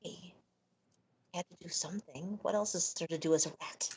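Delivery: low whispered aside. Speaking as a rat character, whispering over to the two others. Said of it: "I would whisper over to the two of them".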